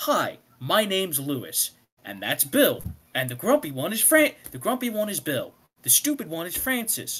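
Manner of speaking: mock overly friendly, sing-song, welcoming voice. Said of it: "because Lewis is Mister Friendly".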